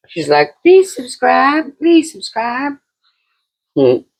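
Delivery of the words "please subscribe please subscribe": put-on southern belle voice, very high. Closing the show, speaker voices Bella the dog in a southern belle voice. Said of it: "southern belle".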